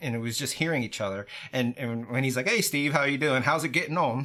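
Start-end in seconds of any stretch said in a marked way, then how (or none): 2.5-4.2 casual put-on British accent. Retelling a friend's greeting on a voice call: imitating Gary's British accent. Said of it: "there in his British accent".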